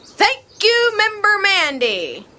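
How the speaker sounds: loud, high-pitched formal address. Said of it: "Will you stop talking so loud?".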